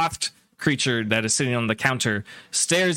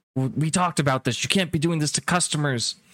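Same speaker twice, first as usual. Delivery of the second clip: put-on very upset scolding, higher pitch; 3 semitones higher than usual. Telling a story, voicing the man behind the counter; acting out a very upset shopkeeper. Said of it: "And he's like very upset".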